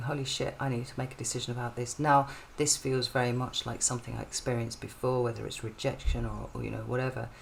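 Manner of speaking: plain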